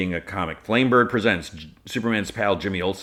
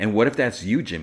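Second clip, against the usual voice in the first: normal talking voice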